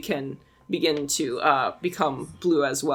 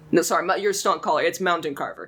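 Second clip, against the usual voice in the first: usual speaking voice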